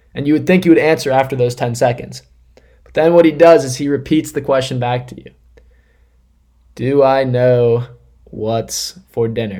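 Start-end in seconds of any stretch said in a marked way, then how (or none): 6.7-9.6 very slow, dragged out, word by word. Acting out Dad repeating the dinner question back, said really slowly. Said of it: "he says it really slowly".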